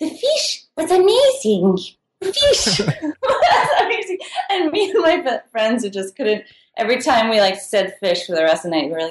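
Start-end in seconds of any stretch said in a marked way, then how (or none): 0.0-4.2 very high, very slow, sing-song put-on French accent. Imitating a french couple raving about the fish: mock french accent. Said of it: "making fun of people's accents".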